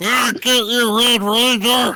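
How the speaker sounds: put-on quacking cartoon duck voice. Asked to say your famous quote, answer in a Donald Duck voice. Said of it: "Donald Duck's famous quote".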